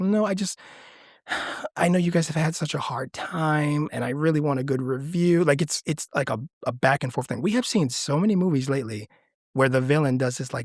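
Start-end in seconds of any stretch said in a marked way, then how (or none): 0.0-5.4 put-on sweet little girl voice. Retelling how Rebecca switches back after threatening Vera: imitating a sweet little girl voice. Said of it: "goes right back to being this sweet little girl".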